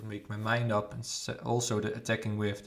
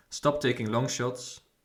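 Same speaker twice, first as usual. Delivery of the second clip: normal talking voice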